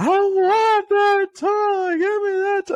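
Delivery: put-on shrill, high, loud, very slow child's scream. Retelling how the son screamed in the store: imitating a child screaming. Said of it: "he's just screaming, like".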